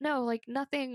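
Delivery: plain reading voice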